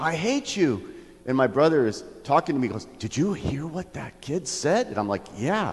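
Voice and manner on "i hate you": put-on child's voice, yelling, lashing out. Recounting a store visit, the speaker repeats a kid's words to parents, retelling a kid's yell. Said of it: "yelling at them".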